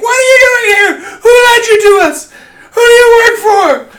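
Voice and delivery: furious shout, very high-pitched, very loud, shrill. A game narrator voicing a woman yelling questions at a player's character, yelling. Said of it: "She's yelling at you like".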